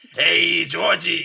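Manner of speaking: put-on high-pitched, loud Brooklyn accent. Describing how the older movie clown talks: brooklyn accent. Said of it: "he's got that Brooklyn accent".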